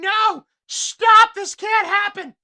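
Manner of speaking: woman's shrill, drawn-out scream, very high and loud. Describing two men fighting on the ground: imitating a woman screaming. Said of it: "the woman is running around in circles screaming".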